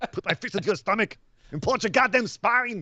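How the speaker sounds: put-on Austrian accent, pitched very high. Threatening a rival wrestler, in Walter's Austrian accent. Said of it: "Walter actually has an Austrian accent".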